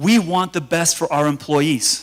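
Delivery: plain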